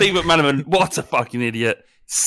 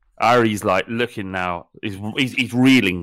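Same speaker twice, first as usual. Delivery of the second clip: ordinary talk, nothing marked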